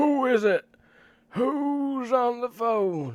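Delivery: put-on far-off hollering, very high, loud, shrill old man. Retelling a phone call as the grandfather calls out in the background, retelling grandfather's shouting. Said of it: "in the background shouting like".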